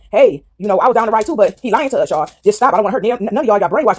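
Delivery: ordinary talk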